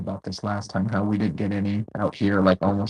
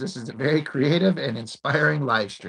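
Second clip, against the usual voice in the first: normal talking voice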